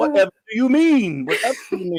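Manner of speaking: Cajun-accented delivery. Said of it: "not gonna do it in this kind of accent".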